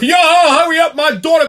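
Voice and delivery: play-acted shrill, very high, aggressive barking yell. Telling a story about a man at a coffee counter rushing the cashier: imitating an aggressive shout. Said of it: "in a very aggressive tone".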